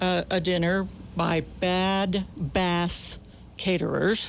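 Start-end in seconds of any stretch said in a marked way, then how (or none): 1.6-4.3 slow, carefully enunciated, every syllable spelled out clearly. Announcing who caters a dinner, slow, clearly enunciated name. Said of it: "Notice I enunciated slow".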